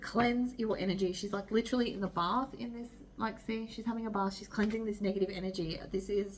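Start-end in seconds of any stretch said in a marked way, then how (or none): none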